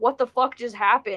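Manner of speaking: normal talking voice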